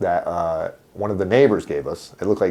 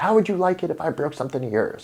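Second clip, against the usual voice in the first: mock mother voice, high, furious, screaming; 8 semitones higher, 4 dB quieter than usual. Retelling a childhood scolding over a broken doll: imitating mother screaming. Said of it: "she's screaming at me about the porcelain doll".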